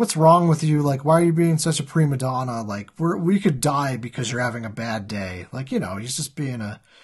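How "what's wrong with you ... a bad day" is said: ordinary talk, nothing marked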